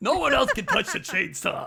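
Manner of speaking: put-on Brooklyn accent character voice, swooping pitch. Imitating a movie character who guards his shed: imitating a brooklyn accent.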